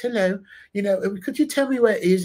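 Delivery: put-on Australian accent, polite tone. Retelling how people in Australia talk to you: imitating an Australian accent. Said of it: "they're talking to you like this".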